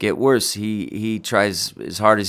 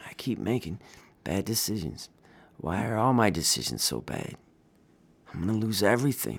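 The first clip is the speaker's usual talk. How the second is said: raw near-half-whisper, words barely audible; 8 dB quieter than usual. Freddy finally speaks to her, unable to look at her: raw, barely audible voice. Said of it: "his voice was raw and so quiet it was barely audible".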